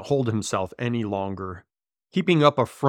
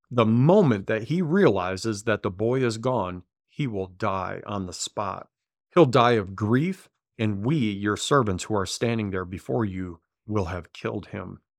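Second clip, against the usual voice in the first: plain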